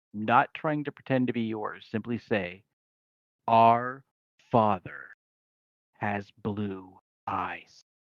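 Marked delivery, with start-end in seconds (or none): 3.4-7.8 very slow, drawn-out, threatening delivery. Voicing Ralos telling a player about their father: threatening Ralos voice. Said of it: "Do I think that sounds threatening?".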